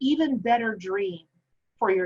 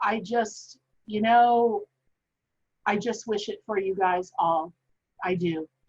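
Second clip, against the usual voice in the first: slow, moved, full of feeling. Closing by telling viewers you believe in them, getting emotional. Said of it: "I'm getting so emotional".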